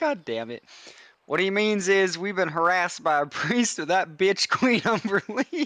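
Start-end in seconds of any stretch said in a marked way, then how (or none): 1.3-5.7 theatrical, high, mild half-yell. In a role-play scene, speaking for the group about being harassed, screaming. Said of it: "Bro, why am I screaming?".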